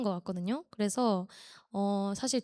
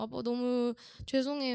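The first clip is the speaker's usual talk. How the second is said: put-on crying voice; 3 semitones higher than usual. Retelling an apology to dad while crying: imitating own past crying. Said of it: "아빠한테 울면서".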